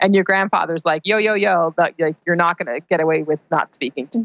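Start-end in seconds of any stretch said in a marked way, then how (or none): 1.0-4.2 put-on blunt, to-the-point manner. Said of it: "right to the point".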